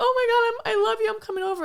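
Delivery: weepy, tearful, very high-pitched crying voice. Retelling a movie scene where the character calls her grandmother: imitating someone crying.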